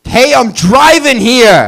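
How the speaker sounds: animated New York accent. Speaker does a series of New Yorkers, this one driving, in a New York accent. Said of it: "This is a New Yorker driving".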